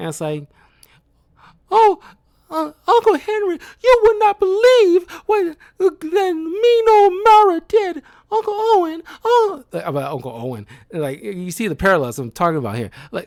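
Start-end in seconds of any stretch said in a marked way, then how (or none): 1.7-9.6 put-on whiny, annoying girl voice, higher and louder. Mocking a film character's annoying voice: imitating Dorothy's whiny voice. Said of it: "annoying voice".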